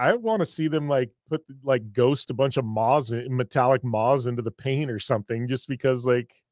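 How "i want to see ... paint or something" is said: ordinary talk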